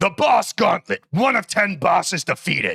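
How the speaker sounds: fantasy-style orc announcer voice. Talking to chat while playing a boss gauntlet, in a World of Warcraft voice. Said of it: "That sounded like a World of Warcraft voice".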